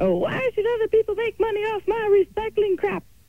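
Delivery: squeaky, very high crazy grandma voice. Quoting what grandma says when asked about it, crazy grandma voice. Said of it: "that crazy grandma voice".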